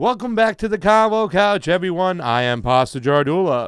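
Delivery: put-on showman announcer voice. Opening the show for the audience: put-on showtime voice. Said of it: "Showtime voice going".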